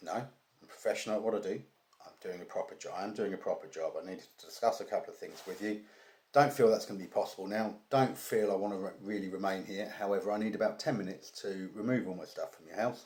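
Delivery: ordinary delivery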